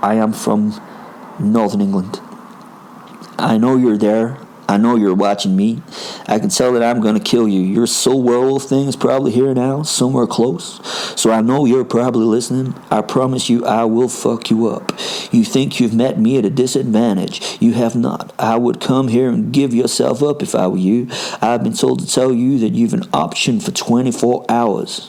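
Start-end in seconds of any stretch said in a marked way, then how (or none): 3.4-25.1 put-on, attempted American accent. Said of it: "I'm gonna attempt an American accent".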